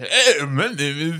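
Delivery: put-on deep female voice. Imitating a woman from a recruitment video: imitating a deep voice. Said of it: "she had, like, this deep voice".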